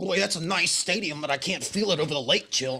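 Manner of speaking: Cleveland-style Ohio accent. Asked about working on a Cleveland accent, the speaker demonstrates a Cleveland accent. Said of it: "this is a Cleveland accent".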